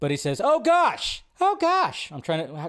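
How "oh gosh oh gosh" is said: very high, very slow, drawn-out voice. Imitating a director dodging a question: Matt Reeves impression. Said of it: "can I do my best Matt Reeves impression?".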